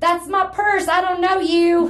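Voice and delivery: mock, shrill, very high screaming. Retelling what someone started screaming at the others: retelling a scream. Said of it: "he started screaming".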